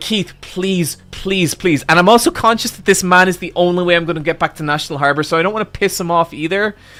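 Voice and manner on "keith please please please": soft, desperate, repeated pleading. Retelling how they begged the man giving them a ride, imitating begging. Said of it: "I'm I'm begging".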